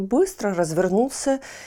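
plain

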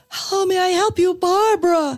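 very high, blaring, loud voice-assistant voice. Retelling the phone assistant suddenly switching on late at night: imitating Cortana speaking loudly. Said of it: "she comes on and really loudly".

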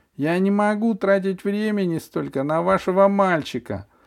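ringing, very high-pitched, declaiming delivery. A doctor addresses a patient's mother in her office; ringing voice. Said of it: "звонко произнесла врачиха".

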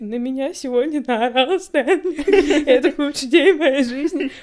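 put-on trembling, teary, quavering voice. Speaker recounts a great scene, quoting a character's line, imitating a trembling, teary voice. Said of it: "Вот этим вот дрожащим голосом со слезами на глазах".

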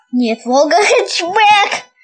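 shouting. Insisting on a correction to the other speaker, shouting. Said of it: "Не кричи, пожалуйста".

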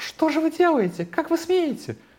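very high, shrill falsetto yell. Recounting being punched in the stomach, the speaker retells a falsetto shout. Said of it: "я таким фальцетом заорал".

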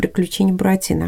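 ordinary delivery

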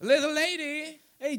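high, screeching parrot call. Telling a story, the speaker voices the parrot at the zoo store: parrot screaming. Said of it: "that parrot just screams out".

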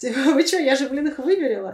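loud, high, indignant, offended blurted outburst.

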